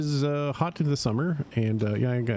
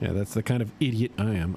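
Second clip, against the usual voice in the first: ordinary delivery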